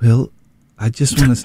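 voice quivering with emotion. Beginning to say something to Will, in a quivering emotional voice. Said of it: "you're not on your deathbed".

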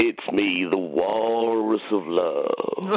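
very deep, loud, slow voice.

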